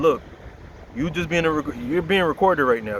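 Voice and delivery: ordinary talk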